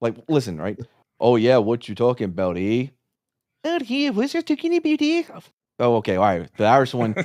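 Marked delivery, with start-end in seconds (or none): 1.6-5.2 put-on Canadian accent, very high and swooping. Playing an accent game with friends, speaker switches to a Canadian accent.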